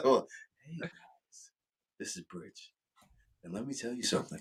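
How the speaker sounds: breathy near-whisper, right up close on the mic. Doing the friend's voice again, right up on the mic: Bridge four voice. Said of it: "he's real close to it when he does it".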